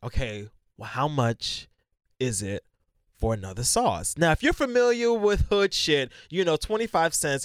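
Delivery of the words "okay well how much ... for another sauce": slow, carefully held-down forced calm. Retelling asking the price of extra sauce: retelling forced calm. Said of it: "So I try to be calm".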